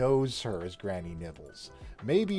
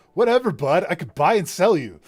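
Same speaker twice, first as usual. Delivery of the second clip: sleazy, arrogant, smug rich guy voice; 9 semitones higher, 10 dB louder than usual. Voicing an imagined character who sleazed his way to the top: sleazy arrogant rich guy voice. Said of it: "this is very much how I imagine this dude".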